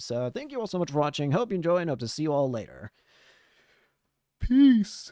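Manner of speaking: talking through yawns. Ending a video and thanking viewers for watching, yawning while talking. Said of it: "I can't stop yawning".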